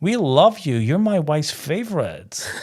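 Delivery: put-on Texas accent. Retelling a woman at Dallas airport recognising the speaker: imitating a Dallas accent. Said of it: "What an accent".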